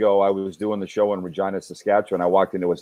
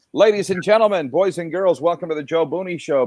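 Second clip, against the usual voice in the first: carnival barker announcer voice; 9 semitones higher than usual. Show host prompted to announce his own show, carnival barker voice. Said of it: "A guy at the carnival welcoming people into the tent".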